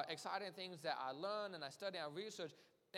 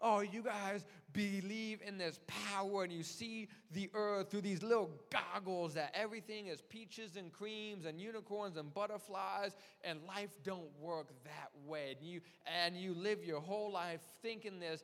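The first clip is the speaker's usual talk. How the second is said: ordinary delivery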